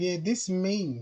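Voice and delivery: acting all innocent, put-on innocent tone. Imitating a woman captioning a photo: imitating an innocent act. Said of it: "Acting innocent shit".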